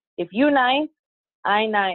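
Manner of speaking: put-on slow English with a Spanish accent. Retelling grandma's oldest saying, imitating grandma's accent. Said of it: "she goes with her accent".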